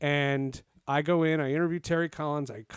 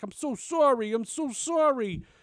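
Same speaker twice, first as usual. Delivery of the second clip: put-on very slow, thick, drawn-out New York accent; 8 semitones higher than usual. Retelling what a woman said after a PA announcement, thick New York accent. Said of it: "she had like a thick New York accent".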